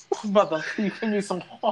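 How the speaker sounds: high-pitched fake British accent. Recalling a Snatch Game performance, the speaker mimics Yara Sofia's British accent. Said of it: "Her British accent".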